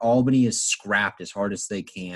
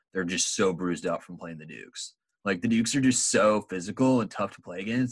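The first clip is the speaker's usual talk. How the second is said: put-on California surfer dude accent; 3 dB quieter than usual. Describing how teams feel after playing the dukes, in a california dude accent. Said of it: "a California dude's accent".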